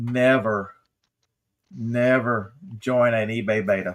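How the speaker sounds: very slow, deliberate, simple first-grade pacing. Repeating a warning to listeners at first-grade level, very slow and simple. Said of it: "let me repeat this in very slow, easy, maybe first grade level".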